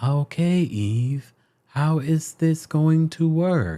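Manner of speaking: softly spoken, soft voice. Recalling defending him, quoting their own words in a soft voice. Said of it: "in that soft voice".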